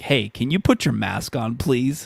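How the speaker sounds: put-on snippy attitude. Retelling how Cheryl asked for a mask with attitude: imitating Cheryl's attitude. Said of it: "straight up, like, just attitude".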